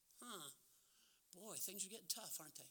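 hushed, very quiet, sarcastic tone. Asking the audience who has been persecuted as Christians, mocking. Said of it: "I'm mocking".

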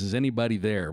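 usual speaking voice

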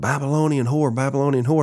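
mild half-shouted yell, said twice. Retelling how Jesse Duplantis reacted in an elevator: imitating someone screaming. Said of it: "he just starts screaming".

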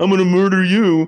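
very high, shrill, loud taunting mimicry. Showing how to repeat a threat back to a robber: mocking voice. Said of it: "That's what you sound like".

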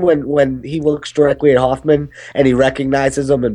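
plain

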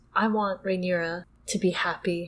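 mock-hushed speech. Retelling a scene where the king speaks to another character: imitating a quiet voice. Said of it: "he uses a quiet voice".

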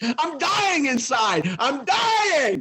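high, laughing mock outrage, wailing, pretending to lose control.

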